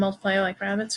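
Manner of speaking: normal talking voice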